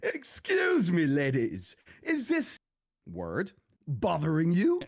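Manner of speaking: high, swooping, wildly exaggerated acted-out voice. Retelling walking up and speaking to him, in the most over-the-top voice. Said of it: "in the most over-the-top voice I could possibly think of".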